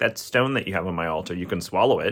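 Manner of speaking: ordinary talk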